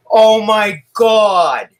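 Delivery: put-on very high, loud Boston accent. Retelling what a little girl said to them yesterday: imitating a Boston accent. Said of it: "like that Bostonian accent".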